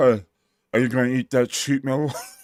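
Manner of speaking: put-on big-jaw voice. Quoting what a guy said, in a jacked-up jaw voice. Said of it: "exactly how I'd imagine if somebody had a jacked up jaw".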